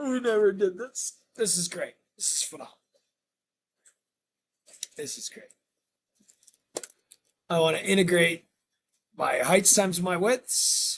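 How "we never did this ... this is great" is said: playfully excited, giddy, silly, rattled off fast. Working through a calculus problem on a calculator feature, giddy and silly. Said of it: "I'm being silly now".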